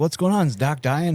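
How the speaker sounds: mocking sarcastic tone. Retelling a phone call to the listener's wife, the speaker repeats the question, retelling it sarcastically. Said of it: "in my sarcastic tone".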